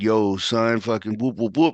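put-on cheering hype-man voice in a New York accent. Speaker retells a man hyping him up, imitating Sia's New York accent. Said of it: "in his New York accent".

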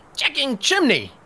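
very high, goblin-y creature voice. In a tabletop game, a player answers in a goblin voice. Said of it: "But I'll say it in a goblin-y".

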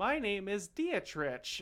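put-on very kid-like, high childlike voice. Retelling what he answered when the Romans asked his name: very kid-like tone. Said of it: "he replied in a very kid tone".

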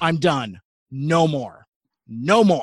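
firm, stern, no-nonsense, final-sounding delivery. Retelling what they told their wife after the movie, retelling a stern voice. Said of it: "I tell my wife in like a stern voice".

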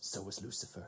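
barely audible, very quiet, dry mutter. Describing a scene, retelling a character's quip, muttered under his breath. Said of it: "just under his breath says".

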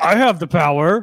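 defensive boastful tone. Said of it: "This makes Edric defensive".

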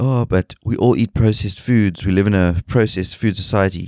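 ordinary delivery

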